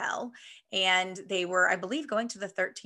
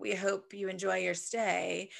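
put-on flat, somber monotone; 3 dB quieter than usual. Imitating the ride's bellhop cast members: imitating a monotone, somber bellhop. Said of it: "monotone and somber".

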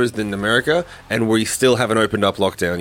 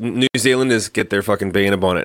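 usual speaking voice

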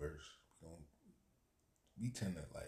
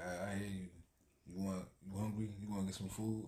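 normal talking voice

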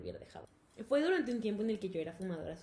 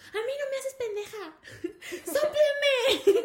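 very high, shrill, very loud scolding yell; 9 dB louder than usual. Retelling what mom yelled when suspecting the speaker smoked, imitating mom yelling. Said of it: "Y me gritó como tres veces".

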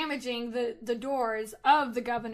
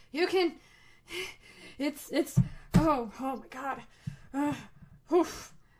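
put-on winded character voice, much slower; 3 semitones higher than usual. Game master playing Titus jogging up behind someone, Titus out of breath. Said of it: "jogging up behind him out of breath and is like".

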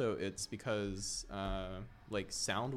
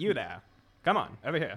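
high, loud mid-Atlantic accent, American and British mix; 5 semitones higher, 10 dB louder than usual. Talking about how people sound in 1930s movies, in a mix of American and British accent. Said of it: "a mix between an American accent and a British accent".

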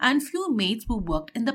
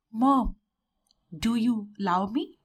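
ordinary delivery, nothing marked

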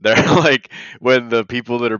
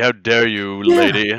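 mock prim, indignant, offended tone. Retelling how a man reacted to a woman hitting on him, mock prim indignation. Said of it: "he's like improprietous about it".

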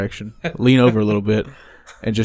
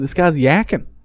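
put-on mixed Argentine-Chicago accent, higher, faster; 5 semitones higher than usual. Quoting a man who keeps saying this, in his Argentinian-Chicago mixed accent. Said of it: "with his weird combination accent of Argentinian and Chicagoan".

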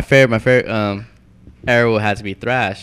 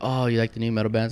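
ordinary talk, nothing marked

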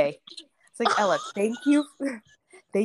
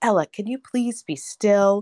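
put-on angry voice, slower; 3 dB louder than usual. Retelling asking a wiggling child during a diaper change: mock-angry.

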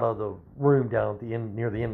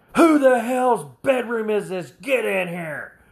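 put-on drill sergeant yell, shrill and very high-pitched; 11 semitones higher than usual. Retelling when the sergeant stepped into their room, imitating a yelling sergeant. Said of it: "yells out".

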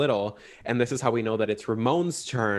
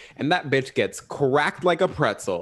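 ordinary delivery

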